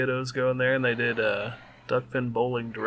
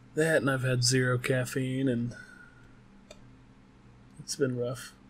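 utterly defeated, beaten-down tone. Chatting with another speaker, who hears you as defeated: sounding defeated. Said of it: "You sound so defeated".

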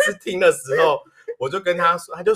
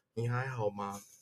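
barely audible, hushed, very quiet, soft voice; 6 semitones lower, 16 dB quieter than usual. Retelling how someone who walked over asked a question, imitating a very quiet voice. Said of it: "他就很小声问说".

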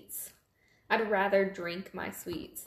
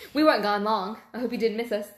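very loud, put-on British accent; 8 dB louder than usual. Back after a short break, greeting: put-on british accent. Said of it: "That was my British accent".

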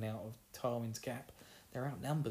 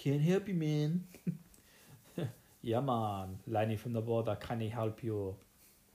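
loud, bad put-on Jamaican accent; 6 dB louder than usual. Speaker playing Lenny from the border, terrible Jamaican accent as Lenny. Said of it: "that's a terrible Jamaican accent".

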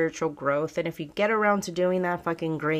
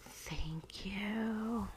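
very quiet, spooky, hushed voice, drawn-out "you"; 4 semitones higher, 14 dB quieter than usual. A speaker says thanks after recounting getting help, scary-sounding. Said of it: "that sounded scary".

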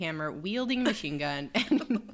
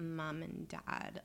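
put-on slow, spoiled rich-girl drawl; 12 dB quieter than usual. Mocking how she says it to a friend, in a rich kid drawl. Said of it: "rich kid drawl".

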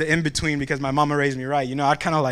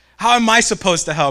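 booming, irritated, heavenly voice from nowhere; 4 semitones higher, 5 dB louder than usual. Telling a joke where people pray and God answers, mock-irritated booming God voice. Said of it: "they hear a booming voice".

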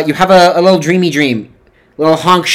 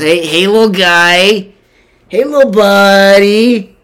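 put-on drunk man voice, higher; 3 semitones higher than usual. Acting out a very intoxicated man walking up to someone on a bench; drunk man voice. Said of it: "he's very intoxicated. He's on the juice".

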